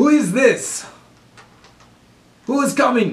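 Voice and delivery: put-on Germanic accent, pitched very high. Voicing a guard who calls out to the party: Germanic-accented voice. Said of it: "this guy has more of a Germanic voice".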